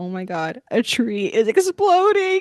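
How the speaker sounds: put-on excited voice. Retelling hearing a huge boom during dinner: retelling an excited reaction. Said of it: "And I was like so excited".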